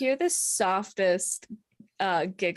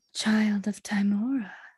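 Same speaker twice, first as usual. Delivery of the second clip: tender, mild, very gentle godlike voice. A mysterious voice speaks inside a character's head, very gentle. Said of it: "very gentle in your head".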